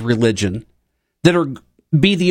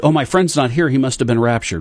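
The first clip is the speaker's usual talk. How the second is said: usual speaking voice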